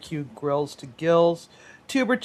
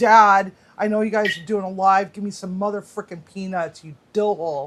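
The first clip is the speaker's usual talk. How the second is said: put-on angry pterodactyl creature voice. Voicing an angry pterodactyl in the other room: mock angry pterodactyl voice. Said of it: "an angry pterodactyl in the other room who's like".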